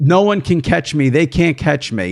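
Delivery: ordinary talk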